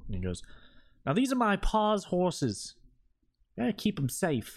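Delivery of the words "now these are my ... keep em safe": very high-pitched, sassy character voice. Voicing a character gesturing at the carriage and horses: sassy NPC voice. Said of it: "he kind of sassily gestures".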